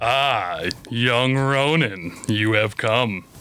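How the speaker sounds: deep, smooth, silky voice. A narrator voices an unseen speaker greeting young Ronin: deep, silky voice. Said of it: "A deep, silky voice said".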